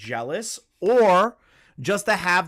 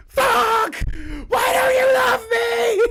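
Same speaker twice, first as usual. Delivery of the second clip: put-on very high, loud, drawn-out shouted whine; 4 dB louder than usual. Mocking a drunk friend after a stranger hug: imitating loud complaining. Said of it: "bitch louder than anyone else at the party".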